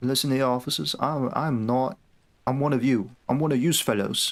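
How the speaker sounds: put-on British accent all the way through. Addressing the officers, speak in a put-on British accent. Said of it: "I could do a British accent".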